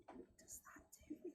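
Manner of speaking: whispering a little. Voicing a character who leans over so another can't hear: whispering a little bit. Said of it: "whispering a little bit".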